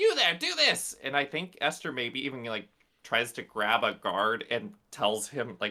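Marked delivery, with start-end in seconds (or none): 0.0-1.0 very high, very loud yelling. Narrating a character yelling at kitchen employees: yelling orders. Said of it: "Esther starts yelling at the various employees".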